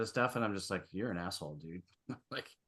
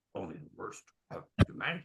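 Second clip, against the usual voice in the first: wise, sage-sounding alien character voice. Speaker shows how a social media comment must be said, in a Yoda voice. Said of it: "you have to say it in a Yoda voice".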